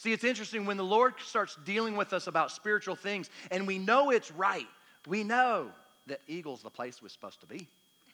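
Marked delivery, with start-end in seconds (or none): 5.1-7.7 bad, horrible fake British accent. Speaker explaining a point, slipping into a horrible british accent. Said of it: "That's a horrible British accent".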